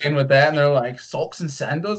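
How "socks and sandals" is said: put-on soft, offhand Canadian accent. Retelling a first practice with a canadian hockey team, doing a canadian accent. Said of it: "like in their accent".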